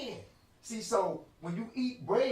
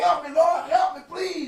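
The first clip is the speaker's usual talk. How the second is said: mock tearful, crying pleading, higher and louder; 9 semitones higher, 10 dB louder than usual. Acting out a sinner praying to God for help: acting out a crying prayer. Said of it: "You start crying".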